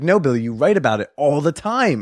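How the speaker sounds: put-on insistent tone. Retelling what another comedian kept claiming: imitating an insistent tone. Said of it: "he was very insistent".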